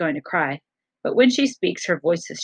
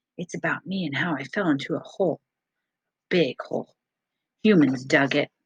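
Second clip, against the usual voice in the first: lowered, hushed, low voice. A narrator reads a character beginning her story, in a lowered voice. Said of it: "Ruby lowers her voice".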